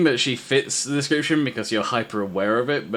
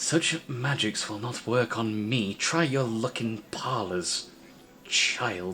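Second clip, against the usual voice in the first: soft, strained, forced even tone; 8 dB quieter than usual. Game narrator voicing a woman rebuffing the player's magic; forcing an even tone. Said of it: "trying to keep an even tone of voice".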